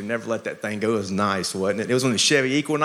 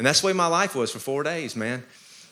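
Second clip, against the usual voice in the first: ordinary delivery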